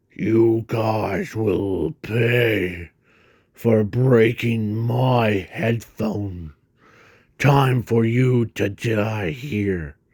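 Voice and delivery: deep, dropped monster voice. Reading a story, the narrator voices a character speaking to the villains: deep tone. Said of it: "as he says in a deep tone".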